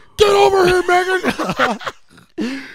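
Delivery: very loud, very high, shrill coach-style holler. Talking about a coach and a player named megan, imitating a coach yelling. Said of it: "Sorry for the yelling".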